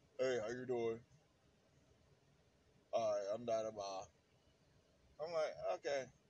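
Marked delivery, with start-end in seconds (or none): 0.2-4.1 badly forced, fake deep voice. Retelling how a man greeted him when they first met, imitating a forced deep voice. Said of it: "he would try to put on the deep voice".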